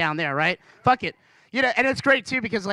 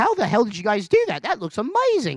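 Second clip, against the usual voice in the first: animated, swooping put-on Australian accent. Retelling an Australian friend's question to the staff: imitating an Australian accent. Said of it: "I wasn't gonna do an Australian voice, and I started".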